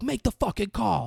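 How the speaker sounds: play-acted very high, ragged, rough yell. Retelling a movie scene where one character screams at another: retelling a scream. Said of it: "they just scream for a while".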